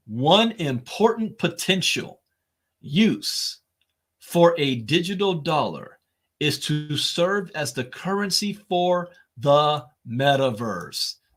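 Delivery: slow, deliberate, careful delivery, word by word. Rereading a quoted sentence aloud to listeners, reading more slowly. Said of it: "Let me read the sentence again more slowly".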